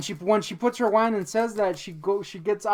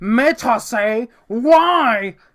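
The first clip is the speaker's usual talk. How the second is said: mock, very loud, nasty, needling, drawn-out "why"; 4 semitones higher, 10 dB louder than usual. Retelling what a woman said to the speaker, in a mock-nasty tone. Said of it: "it was just like this nasty ass".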